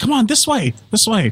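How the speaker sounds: put-on high, coaxing, luring voice. Narrator voices a figure who keeps trying to lead the party away: luring NPC voice. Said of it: "trying to lead you away. Like he's like".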